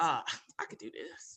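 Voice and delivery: imitated muttering under breath. Retelling a remark made while waiting at a radio station: imitating muttering under breath. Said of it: "under my breath".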